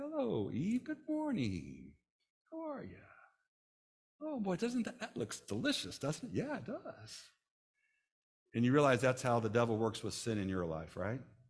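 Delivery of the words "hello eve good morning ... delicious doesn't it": very high, nice, friendly, sing-song, swooping sweet coaxing. Acting out the devil greeting Eve: nice-sounding devil voice. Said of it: "he comes nice and".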